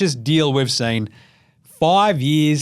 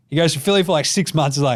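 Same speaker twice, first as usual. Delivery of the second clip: normal talking voice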